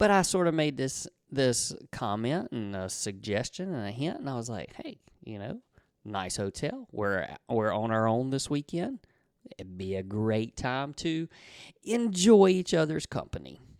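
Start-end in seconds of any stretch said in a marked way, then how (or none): 4.8-13.5 said very nicely. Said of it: "I said that very, uh, nicely".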